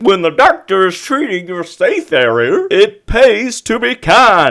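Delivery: silly, dopey, swooping cartoon character voice. Mid-impression, the speaker slips into a Goofy-sounding voice. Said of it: "Why do I sound like Goofy?".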